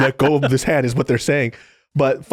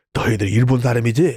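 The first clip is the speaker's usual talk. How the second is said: put-on drunk man's voice, lower pitch; 4 semitones lower than usual. Retelling a drunk older man confronting a couple: imitating a drunk man. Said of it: "just drunk".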